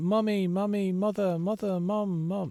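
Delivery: put-on nagging, whiny little kid voice. Mocking players who spam messages: imitating a whining, shouting child. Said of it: "like a child whining, uh, and shouting".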